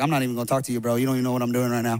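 laid-back, casual, dismissive, brushing-off tone. Imagining Jesus replying to Peter: acting out Jesus. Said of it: "I just imagine Jesus is like".

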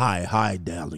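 deep, put-on voice. Imagining a crowd of women greeting someone in the house, deep put-on voice. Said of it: "Deep ass voices".

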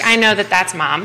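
ordinary talk, nothing marked

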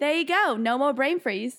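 put-on Australian accent. Asked to repeat their go-to line, doing an imitated Australian accent. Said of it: "if somebody asked me to do an Australian accent, that's my go-to line".

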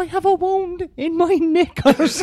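very high, loud put-on elderly woman voice. Retelling how he asked about bandages for a wound: old woman voice. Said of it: "putting on the voice of a of an old woman".

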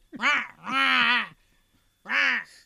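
loud goose honk on rah. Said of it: "And, like, doing that".

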